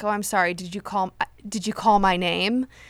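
put-on creepy voice. Retelling a scene where Sam answers a character calling his name: imitating Sam being creepy. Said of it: "real creepy about it".

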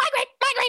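very high, fretful, anxious little monkey chatter. Describing a monkey fetching and eating a grape, voicing the monkey in a monkey voice. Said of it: "he didn't make me do the monkey voice this time".

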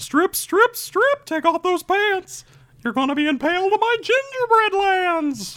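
squeaky voice pitched way up high. Offering to try another voice, launching into a Mickey Mouse voice. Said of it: "I could try Mickey Mouse".

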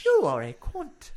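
put-on Irish accent, very high and slow. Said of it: "a very Irish".

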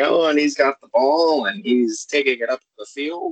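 clumsy, poorly done preacher-style commentary cadence. Imitating the radio announcer at the big game: bad Reverend Lovejoy impression. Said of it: "And that's terrible, Reverend, Reverend Lovejoy".

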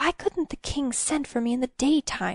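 reproachful hissing under the breath. A woman, her mouth just uncovered, questions the man beside her: hissed. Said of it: "she hissed".

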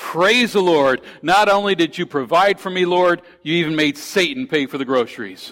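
mock glad, exultant cry, held back. Telling a joke's punchline, the lady looking up to heaven: imitating a shout. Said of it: "She looks up to heaven and she shouts".

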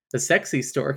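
normal talking voice

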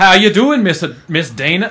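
put-on Southern gentleman voice. Joking about how someone's DMs read, in a Southern gentleman drawl. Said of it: "like a real Southern gentleman".

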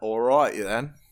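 put-on British accent. A co-host drops into a British accent. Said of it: "Every time you do a British accent".

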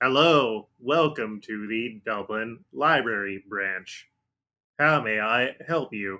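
put-on robot voice. A narrator voices a library robot greeting a visitor, in a robot voice. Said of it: "one of the robots here is just".

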